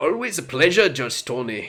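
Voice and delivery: fake accent somewhere between Irish and Scottish. A character greets judge tony, bad irish or scottish accent. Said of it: "That was a really bad um, accent".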